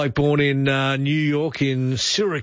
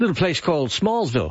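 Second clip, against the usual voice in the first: ordinary talk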